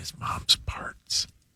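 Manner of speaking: very quiet, hushed whisper under the breath. Answering what the person slipped out of, whispering. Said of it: "it made it weirder that you whispered it".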